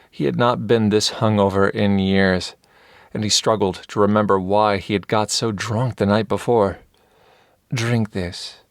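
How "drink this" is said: soft voice, noticeably quieter. Vel offers hungover David a drink, holding the cup to his lips, in a soft voice. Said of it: "in a blessedly soft voice".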